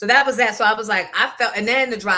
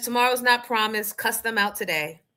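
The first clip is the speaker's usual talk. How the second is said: normal talking voice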